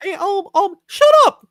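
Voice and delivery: very high-pitched, squeaky put-on cartoon-mouse voice. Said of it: "me doing my best Mickey Mouse impression".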